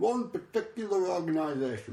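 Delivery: mouth full while talking. Giving clues in a guessing game, talking with a mouthful of shortbread. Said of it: "I'm talking with a mouthful of shortbread".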